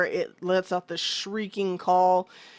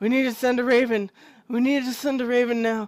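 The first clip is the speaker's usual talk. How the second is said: put-on breathless, out-of-breath voice, higher; 4 semitones higher than usual. Retelling a scene where an exhausted runner reaches the door: imitating someone out of breath. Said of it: "so out of breath".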